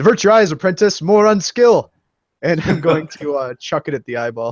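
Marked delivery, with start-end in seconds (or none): 0.0-1.9 loud, high shouted yell in character voice. Tabletop player throwing a shuriken at an eyeball, yelling in character. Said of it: "I'm gonna yell".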